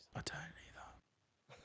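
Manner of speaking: hushed voice. Agreeing with the other speaker about the team: whispering. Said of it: "why are we whispering?".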